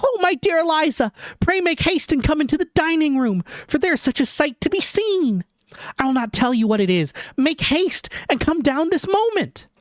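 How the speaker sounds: tiny, very high cartoon-mouse squeak. Reading Maria calling out on the landing, as Maria like a small cartoon mouse. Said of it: "making you sound like a small cartoon mouse".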